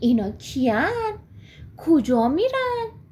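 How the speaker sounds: astonished, wondering, surprised, swooping voice. Narrator reads Pashmak seeing many people walking far below, surprised. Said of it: "با تعجب گفت".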